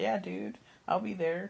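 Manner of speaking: put-on laughing, smiling voice. Retelling a movie scene where Andrew McCarthy agrees to meet: imitating a laughing Andrew McCarthy. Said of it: "laughing and, like, smiling".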